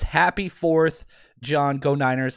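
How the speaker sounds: usual speaking voice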